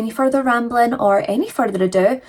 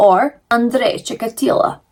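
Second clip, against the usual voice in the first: put-on Ukrainian accent. Repeating the name of the case's subject: put-on Ukrainian accent. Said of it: "that's my Ukrainian voice".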